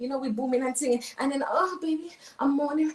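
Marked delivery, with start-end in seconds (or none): 1.5-2.9 put-on pleasure moans. A woman acting out how she fakes it with a partner; faked pleasure moaning. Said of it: "I'm faking all of that".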